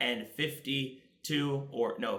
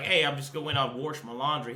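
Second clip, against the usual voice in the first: Oklahoma country accent. Showing how they talk with their parents: Oklahoma country accent. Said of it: "in my natural Oklahoma country accent".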